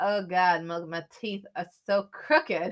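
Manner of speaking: ordinary delivery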